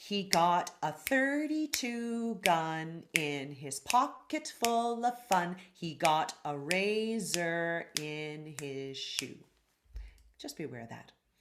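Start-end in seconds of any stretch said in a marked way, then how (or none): 0.0-9.4 very slow delivery, spoken rhythmically to a beat. Showing learners how the lyric sounds spoken rhythmically: rhythmic delivery. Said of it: "rhythmically, it would sound like this".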